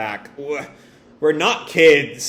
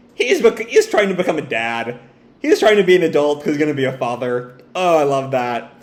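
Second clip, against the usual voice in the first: ordinary delivery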